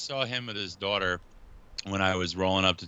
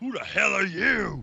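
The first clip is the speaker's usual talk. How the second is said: high, slow mock gruff old man voice. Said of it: "He's like".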